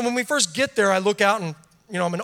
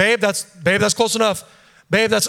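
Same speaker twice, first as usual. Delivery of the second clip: normal talking voice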